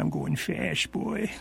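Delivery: whispery, breathy, very slow delivery. Doing a requested impression from a death scene in The Westerner: Walter Brennan impression. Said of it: "your spectacular Walter Brennan impersonation".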